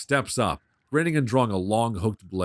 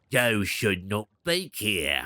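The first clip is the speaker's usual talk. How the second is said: put-on goblin voice, lower and quieter; 2 semitones lower, 4 dB quieter than usual. Telling the story to the listeners, the narrator voices the goblin leader: goblin voice. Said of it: "I'm not doing that voice anymore. It's hard on my throat".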